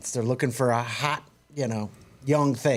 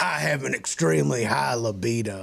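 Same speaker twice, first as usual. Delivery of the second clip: raspy, rough, creaky chain-smoker's voice. Describing a woman on a TV show: imitating a raspy smoker's voice. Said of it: "she's got a smoker's voice".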